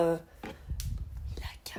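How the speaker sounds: soft, unvoiced whisper.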